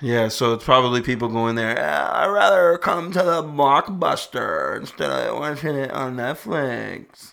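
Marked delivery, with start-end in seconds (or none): 2.1-7.3 slow, drawn-out put-on hipster drawl. Chatting with someone about Portland hipsters, the speaker does a hipster voice. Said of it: "That's my hipster voice".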